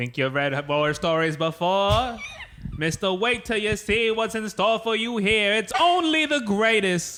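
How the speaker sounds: put-on loud, swooping fifties New York accent. Reading a comic book speech bubble aloud: best 1950s new york accent. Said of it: "That's my best nineteen fifties New York".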